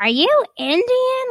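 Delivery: very high, very loud, shrill, ugly, horrid shriek. Retelling how a drugged character asks the housekeeper Jonna a question, in a horrid voice. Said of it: "in this horrid voice".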